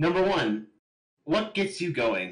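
put-on British accent. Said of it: "asking questions, all Britishly".

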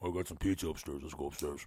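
very deep, soft voice, as from a well. Retelling a night of jamming, the speaker imitates his friend's deep voice. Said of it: "He talks like this".

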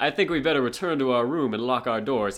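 light Southern accent, cartoon voice. Showing how a character voiced by Casey Kasem speaks, in a slightly Southern Cousin Slicker voice. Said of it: "It's like a little bit of a Southern accent".

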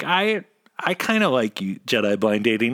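plain

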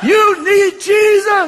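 very loud, very high shout, up close. Retelling standing close over a crying man: imitating own yell. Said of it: "and I'm yelling".

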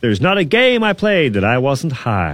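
terrible, clumsy put-on American accent. Reading out a tweeted quote from an American footballer, in a bad Percy Harvin impression. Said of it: "that's a terrible accent".

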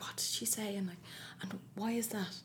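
hushed, quiet whisper. Recalling quietly asking bright classmates questions in class, retelling a whispered question.

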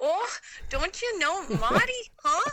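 put-on shrill, very high, loud Minnesota accent. Retelling how a roommate starts talking around the speaker: imitating Erica's Minnesota accent. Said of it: "all of a sudden she's like".

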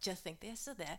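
put-on mumbled Boston accent, very quiet, barely above hush. Retelling own words said in a Boston accent, muttered. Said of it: "it was so muttering".

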